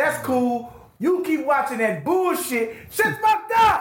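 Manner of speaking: put-on very high, rising, climbing shout. Speaker reenacts what they said into the phone to a woman: retelling own yelling. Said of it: "I'm yelling".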